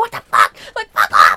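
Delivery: very loud, very deep, booming freak-out roar. Retelling chasing someone out of the room at 3 a.m., reenacting freaking out. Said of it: "I was, like, tweaking".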